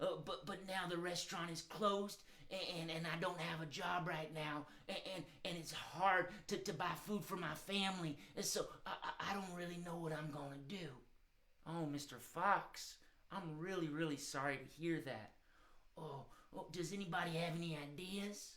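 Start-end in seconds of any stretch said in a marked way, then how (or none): 0.0-10.9 worried, hesitant puppet voice, much quieter. As the out-of-work fox puppet telling the group, worried Mister Fox puppet voice. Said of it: "Oh, [name], are you worried about feeding your baby kits? / Yeah, I have ten kits at home, ten baby foxes, and that's a lot of little mouths to feed. Oh, [name], are you worried about feeding your bab".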